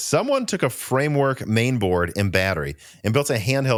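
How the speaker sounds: usual speaking voice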